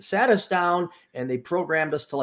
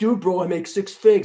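loud, high, boastful gang-style bro voice. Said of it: "like the gang style".

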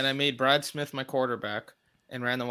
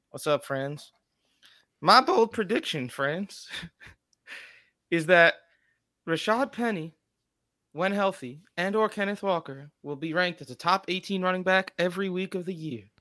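put-on sixty-year-old Southern lady voice; 5 semitones higher than usual. Barging in and sharing his bold prediction with friends, in a put-on southern lady voice. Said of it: "a 60-year-old southern lady who is like inviting you over for supper".

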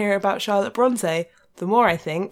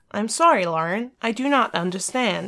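put-on American voice assistant voice. Repeating the phone assistant's answer: imitating American-accented Siri. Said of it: "She's like".

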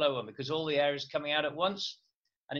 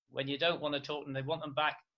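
ordinary delivery

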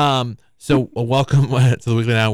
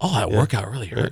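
mock complaining, quieter; 3 semitones lower, 5 dB quieter than usual. Retelling a guest complaining while walking to the door: imitating someone complaining. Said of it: "Just complaining the whole time".

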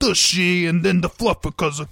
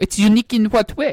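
put-on fake French accent; 3 semitones higher than usual. Playing a French ghost speaking through a spirit box: put-on French accent. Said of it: "you have a, uh, a very unique accent".

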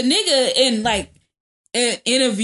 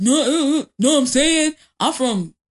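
put-on aggressive rant, higher pitch; 5 semitones higher than usual. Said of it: "He was just like".

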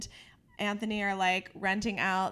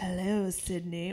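acted threatening voice. Imitating the killer's phone voice from the movies: Ghostface voice. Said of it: "the guy who really did the voice of".

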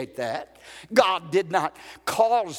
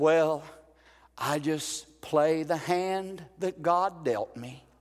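imitated, mock-sad voice; 4 dB quieter than usual. Speaker quotes a sick man's reply to sympathy, imitating a sad voice. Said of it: "in a sad, sad voice".

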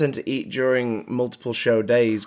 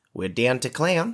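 put-on Australian accent; 3 dB quieter than usual. Trying out a phrase for their Australian listeners: Australian accent. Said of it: "lovely phrase to say in an australian accent".

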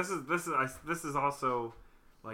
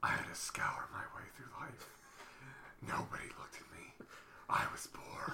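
put-on brooding superhero voice; 2 semitones lower, 11 dB quieter than usual. In a chat about Batman's luck, one speaker starts talking like Batman. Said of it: "You're talking like Batman".

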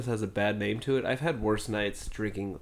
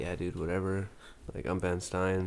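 stoned-sounding, flat droning monotone with no tune; 3 semitones lower, 4 dB quieter than usual. Showing the others how Ben Stein talks, as if stoned, in a monotone Ben Stein impression. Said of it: "you know how he's so that wouldn't like monotone".

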